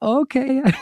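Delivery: put-on high, heavily accented English. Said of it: "spoke English, but with a heavy accent".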